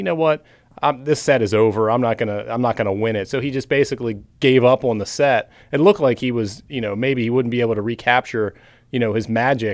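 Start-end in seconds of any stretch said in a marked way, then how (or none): none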